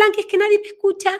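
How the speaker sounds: put-on very high, fast childlike little girl voice.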